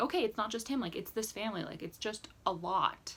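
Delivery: plain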